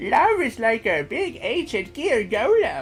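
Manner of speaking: put-on character voice, pitch swooping up and down. Trying out a voice right after asking how to do it: Crowler voice. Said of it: "how do I do a Crowler voice?".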